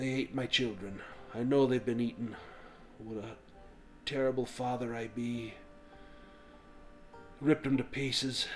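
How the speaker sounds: very quiet half-whisper, barely loud enough to hear. Running a game scene, the speaker voices a father character in a quiet half-whisper. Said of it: "he whispers".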